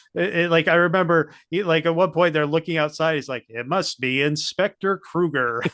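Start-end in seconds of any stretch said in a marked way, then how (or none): 3.5-5.7 slow, grand, theatrical and dramatic delivery, acted out. Recalling a movie character looking outside, imitating his dramatic voice. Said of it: "he says his name with such dramatic".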